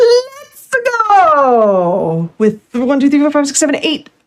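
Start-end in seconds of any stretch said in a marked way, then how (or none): 0.0-2.3 high, swooping heroic call with stretched-out "go". Reading a donation message aloud in the Mario voice. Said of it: "we'll say this in the Mario voice".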